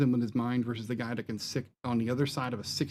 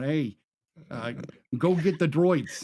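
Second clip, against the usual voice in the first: put-on Brooklyn accent, higher and slower; 4 semitones higher, 4 dB louder than usual. Discussing Star Wars, the speaker imagines a guy from Brooklyn giving the line: Brooklyn accent. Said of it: "some guy from Brooklyn out there going".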